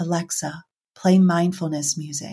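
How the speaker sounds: whispered speech. Retelling what the speaker said to a voice assistant, retelling a whisper. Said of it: "I literally whispered and I said".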